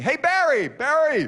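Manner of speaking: high-pitched, loud shout. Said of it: "people still yell to me".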